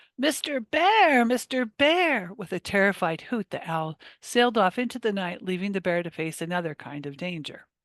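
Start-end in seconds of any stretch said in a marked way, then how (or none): 0.2-2.3 shrill, high, drawn-out, slow witch screech. Reading a story, the witch calls out to the bear: screechy witch voice. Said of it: "a screechy voice split the air".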